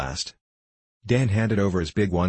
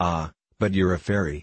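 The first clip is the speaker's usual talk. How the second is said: plain reading voice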